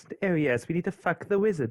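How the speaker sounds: strong put-on British accent. Before giving the outro, saying one line in a very British accent. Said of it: "need to say in a very British accent".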